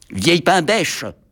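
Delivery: rude, saucy, insolent, cheeky. The little locomotive answering the headmistress, retorting insolently. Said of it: "répliqua insolemment".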